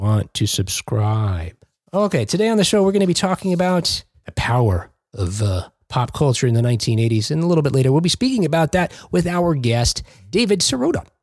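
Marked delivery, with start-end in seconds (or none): 0.0-1.5 low, slow, hypnotic hypnotist drone. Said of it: "as if to hypnotize you".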